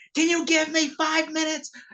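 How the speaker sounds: sudden, high-pitched shout. Telling a story about a man at work, the speaker quotes him at Tom: imitating someone yelling at Tom. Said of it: "he just starts yelling at Tom".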